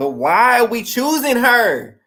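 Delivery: very loud, high, rising yell. Arguing about why someone was picked, speaker apologizes while yelling. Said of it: "Sorry, I'm yelling".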